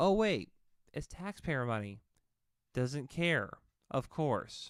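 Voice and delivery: mocking, tongue-in-cheek sarcastic tone. Reacting to a candidate's answer about lost money: sarcastic. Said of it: "I'm being sarcastic".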